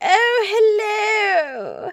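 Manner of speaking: very high, loud bad posh British accent, oh stretched. Imitating your father greeting your partner at the house: bad Queen Elizabeth II impression. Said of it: "my father would be like".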